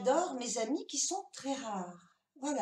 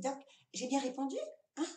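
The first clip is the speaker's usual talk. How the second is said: normal talking voice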